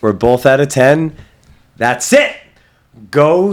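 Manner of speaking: slow, emphatic, loud, rising, drawn-out yell. Agreeing on a ten rating for the movie, yelling. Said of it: "I don't know why I'm yelling".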